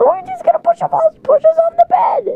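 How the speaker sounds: panicked alarm, pitched way up.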